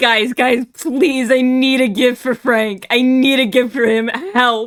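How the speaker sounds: fake frantic, pleading voice. Imagining the sender of a first-time message running in: imitating someone frantic. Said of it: "frantically running into the room".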